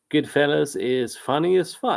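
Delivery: ordinary delivery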